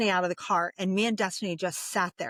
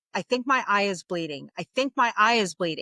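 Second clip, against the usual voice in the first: normal talking voice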